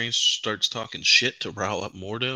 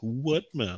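put-on, snide, really obnoxious delivery; 4 semitones higher than usual. Retelling a movie scene's comeback line: imitating an obnoxious delivery. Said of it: "she says it real, like, obnoxious".

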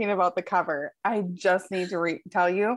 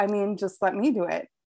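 usual speaking voice

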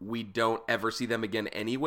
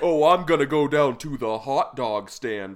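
loud, slow, careful put-on American accent, non-native speaker; 6 dB louder than usual. Imitating a non-American English speaker doing an American accent. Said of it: "a non-American English speaker does, like, a, an American accent".

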